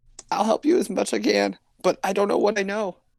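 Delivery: mock tearful, sob-broken voice, very high. Acting out what a new cult member said while nodding her head, imitating her sobbing. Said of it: "as she like sobs".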